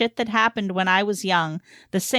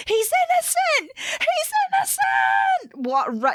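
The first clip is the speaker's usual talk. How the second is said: acted, very high, very slow, swooping drawn-out yell. Speaker recalls a brother running down the school hall: retelling a scream. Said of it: "my brother screaming at the top of his lungs".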